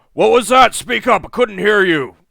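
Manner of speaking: very loud, high, booming giant bellow. Voicing an armored giant shouting down from the palisade: booming giant shout. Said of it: "shouts down, uh, in, in a very booming voice".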